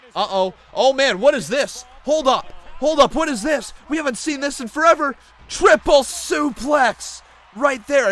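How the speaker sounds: thrilled, shocked shouting.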